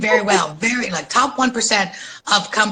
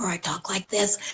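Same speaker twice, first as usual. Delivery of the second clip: faint whisper, quieter; 8 dB quieter than usual. Speaker who couldn't speak for two years shows how they talked: faint whisper. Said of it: "I barely could whisper".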